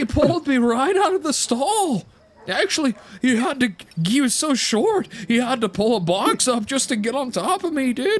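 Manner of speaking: put-on horse voice. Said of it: "why does he sound like Rangel".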